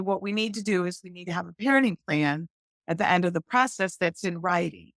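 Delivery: ordinary delivery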